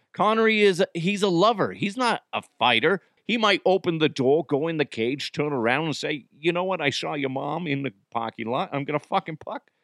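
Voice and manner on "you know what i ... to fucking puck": put-on Boston accent, slipping in. Voicing a character talking before a fight: boston accent. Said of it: "I slipped into a, a fucking a Boston accent".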